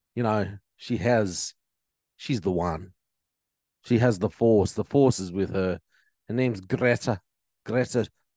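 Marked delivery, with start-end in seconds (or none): 6.2-8.0 put-on Scottish accent. Speaker introduces a climate activist to listeners, in a scottish accent. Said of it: "I'm doing a Scottish accent".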